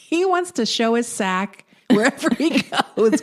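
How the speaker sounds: laughing, bemused delivery through the words.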